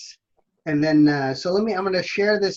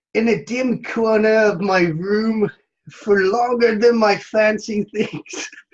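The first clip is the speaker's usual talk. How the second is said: slow, bad put-on Irish accent; 6 semitones higher, 4 dB louder than usual. Reading verse aloud for judge Keith, Irish accent. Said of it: "we have to do this in an Irish accent".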